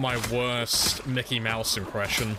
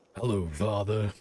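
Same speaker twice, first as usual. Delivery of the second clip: exaggerated, very deep put-on bass voice; 2 semitones lower than usual. Acting out an imagined child at the door greeting his father: very deep put-on voice. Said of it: "He's gonna have a voice deeper than mine".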